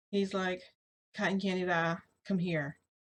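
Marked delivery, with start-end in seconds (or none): none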